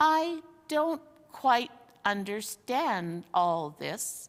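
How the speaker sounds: slow, bewildered, puzzled grumbling. Narrator reads the bear speaking after a long silence, slow, puzzled voice. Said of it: "the bear began in a slow, puzzled voice".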